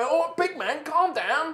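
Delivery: high, nervous, placating pleading tone, quick. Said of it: "he's like".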